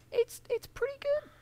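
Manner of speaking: voice shoots up to a very high pitch. Giving a first opinion on a new show, voice going very high. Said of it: "why my voice went so high then".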